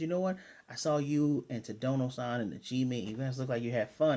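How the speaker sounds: ordinary delivery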